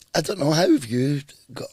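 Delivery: voice breaking and cracking, pitched high. Interviewer starts asking the guest a question: voice breaking. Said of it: "voice just broke".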